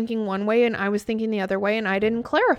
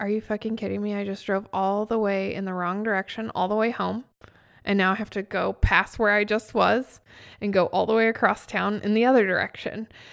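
ordinary talk, nothing marked

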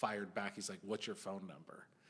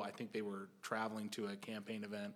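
ordinary talk

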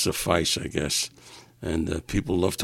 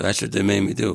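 ordinary talk, nothing marked

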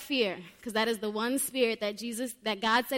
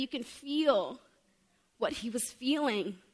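choked up, voice catching, drawn out. Preaching about the Savior's prayer before his suffering, getting choked up. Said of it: "I feel like I'm getting choked up".

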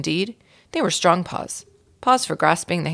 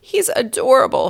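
shrill, high, loud squealing cry; 6 semitones higher, 5 dB louder than usual. A narrator reads Mary Lou's line as Ralph pleads through the glass: squealed. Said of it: "squealed Mary Lou".

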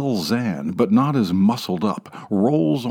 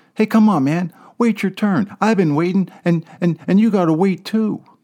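put-on small child's high, squeaky voice; 9 semitones higher than usual. A small boy clutching a ten-dollar bill speaks up: high, squeaky voice. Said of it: "says in a high, squeaky voice".

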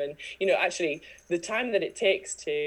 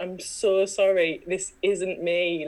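put-on slow, tearful sobbing; 3 semitones higher, 4 dB louder than usual. Recalling ringing Catherine up to apologize: retelling crying on the phone. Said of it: "ringing Catherine up crying".

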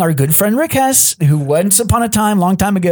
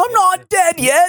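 put-on squeaky, high-pitched British accent; 11 semitones higher than usual. Speaker quoting a line, pretending to be Monty Python with a British accent. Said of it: "I could try to do the British accent".

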